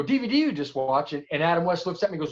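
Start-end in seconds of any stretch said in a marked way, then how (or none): none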